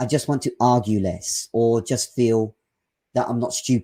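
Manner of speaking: ordinary talk, nothing marked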